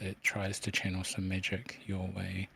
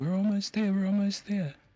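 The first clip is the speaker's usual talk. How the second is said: screaming way up high and loud; 12 semitones higher, 7 dB louder than usual. Voicing the Arcanist shimmering with color: screaming. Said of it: "screams out".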